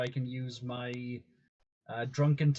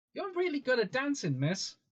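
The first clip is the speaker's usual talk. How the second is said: put-on shrill, swooping, very high, loud child voice; 12 semitones higher than usual. Playing a little kid learning to dance, speaking loudly to be overheard: speaking loudly as a child. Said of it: "I'm speaking loudly for everyone else".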